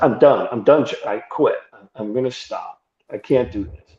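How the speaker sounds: shaken, tearful, crying voice. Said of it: "But I'm shaking".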